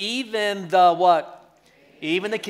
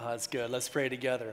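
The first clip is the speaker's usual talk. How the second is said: plain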